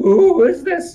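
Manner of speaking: bubbling creature voice. Speaker voicing a sentient creature that starts speaking, weird bubbling voice. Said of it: "starts speaking in this weird voice that kind of bubbles a bit".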